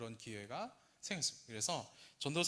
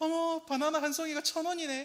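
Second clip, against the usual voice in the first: very high, loud, thrilled and delighted excited exclamation; 8 dB louder than usual. Retelling what an elder said in the car: imitating excited surprise. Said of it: "노트북을 사서 그 언박싱 했을 때 그 톤으로".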